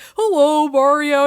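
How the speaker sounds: high, loud, eager, excited, goofy little creature voice. Imitating the sea creature greeting Mario: imitating excited sea creature. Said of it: "and he's just, like, excited".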